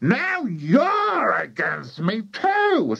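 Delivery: put-on cranky old woman voice, high drawn-out shout. Reading Grandmother speaking to her daughter, shouting. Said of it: "shouted Grandmother".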